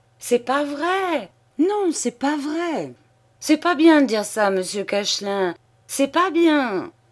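alarmed and flustered. Narrator reads an old man protesting a joking accusation, flustered and alarmed. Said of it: "Le vieux, effaré, répétait".

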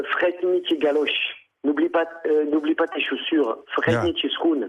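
normal talking voice

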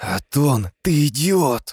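high, anxious, alarmed hiss. Vuloa hisses at Aton with alarm in her voice. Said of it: "Прошипела с тревогой в голосе".

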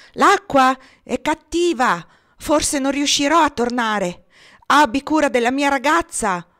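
high, loud hollered shout. A man about to swim out through the waves shouts back to the narrator. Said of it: "Gridò e se ne andò".

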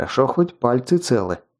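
ordinary delivery

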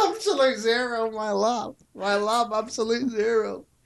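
play-acted high shouting, same words repeated over. Mocking a character who keeps going on about his lab: imitating someone shouting. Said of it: "He just starts shouting about absolute zero".

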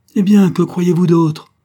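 loud, high, harsh, savage brutal shout. A woman answers her husband's incredulous question: shouting brutally. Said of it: "cria-t-elle brutalement".

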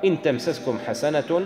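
ordinary talk, nothing marked

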